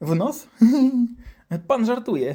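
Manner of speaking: put-on high, slow, disbelieving kid voice.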